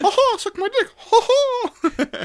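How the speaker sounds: high squeaky cartoonish voice. Mocking the other speaker's rat outbursts, make the Mickey Mouse noise. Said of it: "I made the Mickey Mouse noise".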